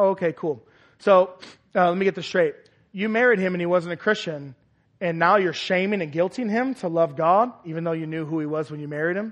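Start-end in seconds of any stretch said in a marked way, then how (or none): none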